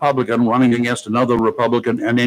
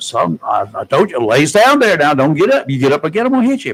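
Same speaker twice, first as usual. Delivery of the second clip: put-on country Oklahoma accent; 4 semitones higher, 4 dB louder than usual. Retelling what a store clerk told a man on the floor: imitating an Oklahoma accent. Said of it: "Oklahoma boy, got the perfect accent".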